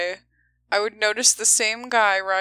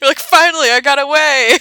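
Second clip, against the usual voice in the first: very loud, drawn-out, playful teasing; 6 semitones higher, 11 dB louder than usual. Teasing the other speaker after their childhood story, teasing. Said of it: "I'm teasing you".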